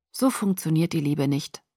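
plain reading voice

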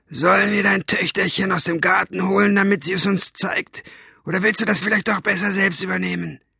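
rough, rasping voice. Narrator reads a voice Maggie overhears through the wall, rough and raspy. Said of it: "Rau war sie, wie eine Katzenzunge".

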